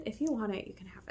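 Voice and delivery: soft, gentle, coaxing whisper.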